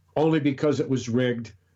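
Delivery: ordinary delivery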